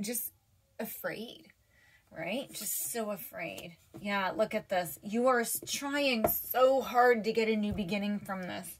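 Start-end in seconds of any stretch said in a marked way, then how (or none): 0.0-3.8 soft, hushed voice close to tears. Speaker says something threw her back, getting a little teary. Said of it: "I'm like getting a little bit teary".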